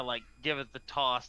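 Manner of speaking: ordinary talk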